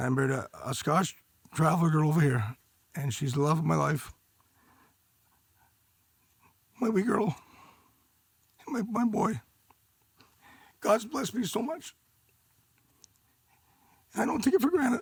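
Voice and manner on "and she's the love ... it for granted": emotional, deeply moved, voice pitched up. Telling Jordan about his wife and children: emotional. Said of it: "I get emotional. I'm sorry".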